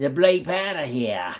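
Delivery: put-on New Jersey accent on the phrase. Speaker repeats their previous remark, now in a new jersey accent. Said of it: "New Jersey accent".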